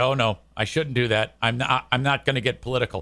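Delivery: low muttering under breath. Retelling what someone said on stage about a joke: imitating someone muttering under his breath. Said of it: "under his breath".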